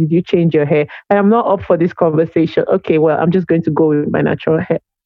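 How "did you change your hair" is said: ordinary delivery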